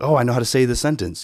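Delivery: ordinary delivery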